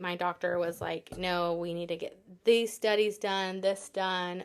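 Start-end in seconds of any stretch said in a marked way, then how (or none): none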